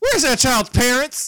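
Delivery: loud, booming, blunt delivery. Retelling how the father calls out in a restaurant: imitating a loud dad. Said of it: "loud as fuck, will just go".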